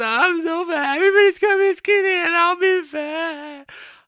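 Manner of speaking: sobbing, high, loud crying wail, drawing out "fat". Retelling breaking down during yoga: imitating own past crying. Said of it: "I cried".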